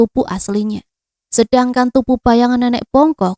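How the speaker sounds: ordinary delivery, nothing marked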